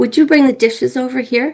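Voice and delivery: soft, gentle voice. Showing how a request can influence someone, gentle request. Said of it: "I said it gently".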